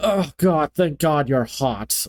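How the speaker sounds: slow, dismissive, patronizing, talking-down tone. Imitating the brother character talking to his sister: imitating a condescending brother. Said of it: "dismissive and condescending ab-, about her".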